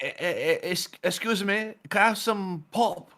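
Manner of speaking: very high-pitched, vague, sort-of British accent. Explaining what people call soft drinks, acting out asking for one; kind of British accent. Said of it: "that actually sounded kind of British".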